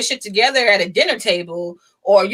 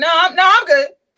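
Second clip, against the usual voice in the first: mock boohooing, put-on crying, higher; 8 semitones higher, 4 dB louder than usual. Teasing the listener caught boohooing in a corner, the speaker imitates their tearful denial. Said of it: "caught you in the corner, like boohooing".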